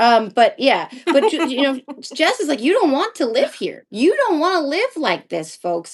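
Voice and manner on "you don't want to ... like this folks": put-on twang laid over every word, swooping pitch. Quoting what someone says to folks, in a put-on twang. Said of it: "I just like doing a twang".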